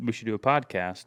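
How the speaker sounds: normal talking voice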